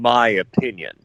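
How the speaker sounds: strong stress on "my opinion". Adding a caveat to a criticism: stress on MY OPINION. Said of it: "I gotta stress the words".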